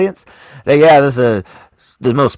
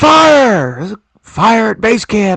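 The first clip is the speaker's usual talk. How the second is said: mock shrill, very high alarmed yell, fire drawn out; 10 semitones higher than usual. Recounting a movie scene where a character yells, retelling an alarmed yell. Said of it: "Then he yells like".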